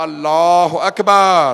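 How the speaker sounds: slow, loud, drawn-out chanted call. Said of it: "जनाब अली अकबर अलैहिस्सलाम ने अजान दी".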